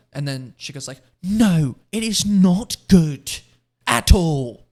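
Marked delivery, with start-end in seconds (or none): 1.3-4.6 put-on slow, loud, drawn-out British accent. Retelling a woman's harsh answer to her question, the speaker imitates her British accent. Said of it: "She has like a British accent".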